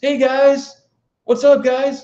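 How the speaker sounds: gushing, fake overexcited put-on voice, very high. Refusing to fake energy, the speaker mocks a greeting, overexcited and hitting high notes. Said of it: "be overexcited and try to hit the high notes".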